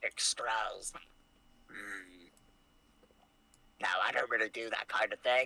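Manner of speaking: goblin shopkeeper character voice. Narrating a game, the speaker answers a player as a goblin merchant in a goblin merchant voice. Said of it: "And the goblin says".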